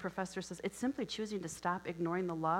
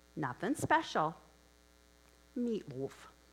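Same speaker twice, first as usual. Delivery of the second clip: put-on Minnesota accent; 3 dB louder than usual. Retelling Blanche answering another woman's question, in a Minnesota accent. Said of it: "just in her Minnesota accent".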